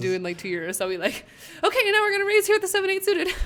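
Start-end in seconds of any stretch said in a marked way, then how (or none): 1.6-3.3 very high, shrill, booming put-on hyped-up voice. Pretending to announce a poker raise: put-on excited Mountain Dew voice. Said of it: "I kinda did a voice there".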